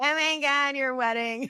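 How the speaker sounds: mock tipsy, high, drunk woman's voice, gushing. Describing wedding crashers at resorts, the speaker imitates a drunk woman at the pool. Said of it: "the lady in her bikini who's drunk at the pool".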